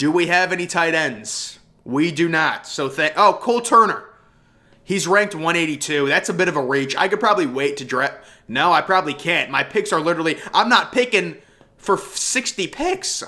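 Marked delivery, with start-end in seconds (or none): 12.0-13.2 voice cracking and breaking slowly mid-line. During a draft, the speaker complains about waiting on picks: voice crack. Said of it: "That was not a voice crack".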